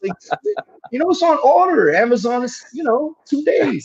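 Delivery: exasperated dude voice, pitched way up.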